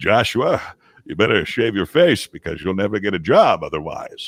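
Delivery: stately, lordly, regal grandfatherly voice. Joshua recalls the voice his grandfather had, regal grandfather voice. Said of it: "a very regal uh, tone".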